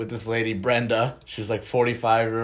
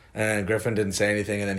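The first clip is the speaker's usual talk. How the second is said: usual speaking voice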